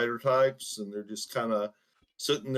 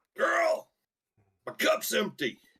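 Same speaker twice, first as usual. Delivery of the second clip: put-on old man voice calling out, very high pitched. A storyteller voices an old man calling to the girl at the bar, old man yelling. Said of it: "suddenly the old man yells".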